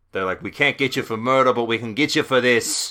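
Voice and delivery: imitated Australian accent. Discussing a crime with a co-host, voicing what they would say, in an Australian accent. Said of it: "my Australian accent is turning into uh, Mayor Wim Mayor".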